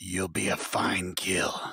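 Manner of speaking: big, loud, booming voice. Narrator voices a telepathic voice in a player's head, booming voice. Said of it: "booming voice in your head say".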